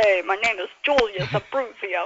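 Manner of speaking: put-on very thick Brooklyn accent. Recalling an actor's roles and quoting one of his characters, Julius Abruzzio's Brooklyn accent. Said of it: "with the really Brooklyn accent".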